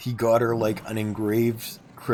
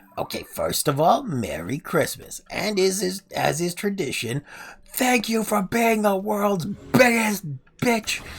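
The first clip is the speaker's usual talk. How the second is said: piercingly high, comic voice pushed way up; 10 semitones higher than usual. Retelling a celebrity video message to a gift recipient: Gilbert Gottfried voice. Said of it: "In his very Godfrey-esque voice".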